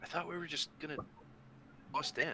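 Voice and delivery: hushed, very quiet whisper. Speaking in character to teammates before going through a window: whispering. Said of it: "I whisper, I guess".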